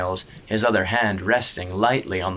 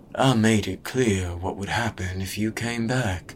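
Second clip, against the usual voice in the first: spoken in a murmur. The gray man warns a boy who came back; murmured. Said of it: "the gray man murmured".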